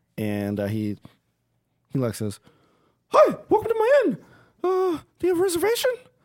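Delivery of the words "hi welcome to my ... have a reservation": small elf voice, much higher and faster. Narrator voicing a small elf at an inn podium greeting arrivals, small elf innkeeper voice. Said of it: "a small elf at like a kind of like a podium".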